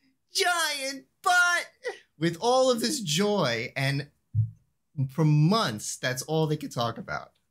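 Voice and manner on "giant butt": joyful yell. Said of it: "out of nowhere I yell".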